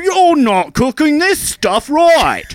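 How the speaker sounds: shouting in a fake Australian accent. Describing what Gordon Ramsay is like: Gordon Ramsay impression with Australian accent. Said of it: "he's Australian, and he's like".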